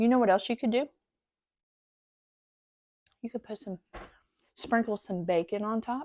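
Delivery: talking while chewing, mouth full of food. Giving the audience another serving idea while eating, talking with mouth full. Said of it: "I don't mean to talk with my mouth full".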